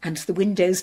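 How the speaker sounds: plain reading voice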